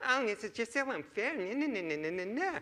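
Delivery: high, whiny, complaining little voice. Acting out the whiny voice in his own head, mock-whiny voice. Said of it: "there was this whiny voice about".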